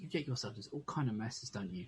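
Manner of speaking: very quiet, hushed, barely audible voice. A game narrator voices someone speaking after footsteps move away, very quiet voice. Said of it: "you hear very quietly".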